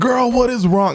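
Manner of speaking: play-acted very high, carrying, shouted yell. Retelling a call to a client downstairs: imitating someone yelling. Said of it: "yelling over the balcony".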